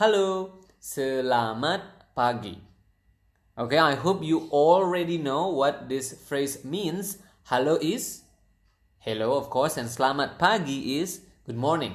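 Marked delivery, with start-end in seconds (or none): 0.0-2.6 slow, deliberate speech with each syllable set out carefully. Teaching a sample indonesian phrase to learners, saying it at slow speed. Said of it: "the slow speed would be".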